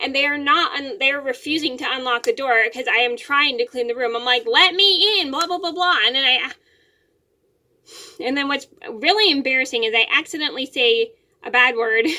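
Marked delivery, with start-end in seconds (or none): 4.4-5.3 mock frustrated yelling, higher, louder, slower. Retelling yelling at the girls to unlock the bedroom door, retelling frustrated yelling. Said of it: "I'm yelling at them to let me in".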